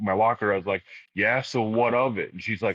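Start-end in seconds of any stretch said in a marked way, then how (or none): 1.1-2.3 put-on snotty, defensive, childish, irritable, drawn-out delivery. Retelling a reply to a girl at a school locker: imitating a pissy fourth-grader. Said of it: "a pissy, like, fourth grade".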